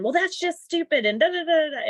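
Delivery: high, loud yelled reply. Retelling an argument after asking her to calm down: imitating someone yelling. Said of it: "she just yelled again".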